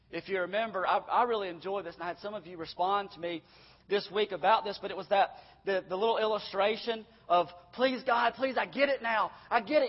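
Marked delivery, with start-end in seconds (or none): 7.7-9.9 desperate, begging, pleading cry. Retelling an illustration of someone in hell: imitating someone crying out. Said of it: "crying out from hell".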